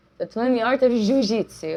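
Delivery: poor put-on Brazilian accent.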